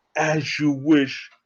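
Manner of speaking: low, soft, put-on British accent. Retelling a story, the speaker acts out a man's reply in a put-on British accent. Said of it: "he has a British accent".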